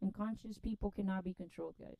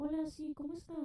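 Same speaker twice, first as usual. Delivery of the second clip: phone voice, much higher and slower; 8 semitones higher than usual. Speaker explaining that everybody changes their voice on the phone: phone voice. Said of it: "Everybody has a phone voice".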